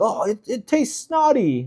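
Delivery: bad, high, failed attempt at British accent. Quoting two British dudes who tried poi, in a bad British accent. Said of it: "I can't do a British accent".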